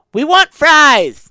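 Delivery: put-on very high, loud little-girl voice. Telling of repeated phone calls to a barbecue restaurant: little girl's voice. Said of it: "You hear a little girl's voice saying".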